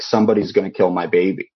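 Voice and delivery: mock tearful, crying pleading voice. Retelling a crying woman's words at the fire station: imitating someone crying. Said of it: "and she's crying".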